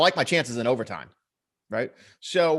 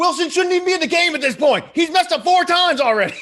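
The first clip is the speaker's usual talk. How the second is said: play-acted, very high, shrill, fed-up screaming rant; 13 semitones higher, 5 dB louder than usual. Retelling a frustrated rant about a player: imitating someone screaming. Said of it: "he's literally screaming like".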